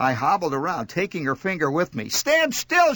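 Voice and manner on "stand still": very high, shrill shriek. A woman with her finger jammed in a shoe screams at the narrator, screaming. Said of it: "she screamed".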